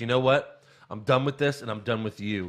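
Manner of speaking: put-on upset, outburst-like voice. Retelling a wrestling scene where Candice walks out: imitating Candice upset. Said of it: "she gets so upset".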